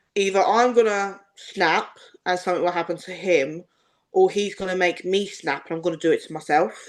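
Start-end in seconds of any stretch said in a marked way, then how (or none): none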